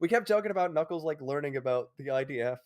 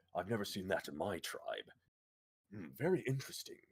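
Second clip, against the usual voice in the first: very low, deep, musing, mulling character voice; 8 semitones lower, 10 dB quieter than usual. Imagining how Knuckles would react to a female warrior: Knuckles voice. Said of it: "I think Knuckles will be like".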